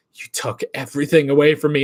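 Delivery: furious, angry acted character voice. Retelling a movie scene, quoting her line: imitating a furious character. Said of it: "She's fucking pissed".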